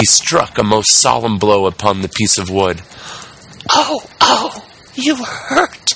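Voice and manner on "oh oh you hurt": small distant wail, very high, slow, drawn out. Narrator reads a tiny voice crying out as the wood is struck, faraway little voice crying out. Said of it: "cried the same faraway little voice".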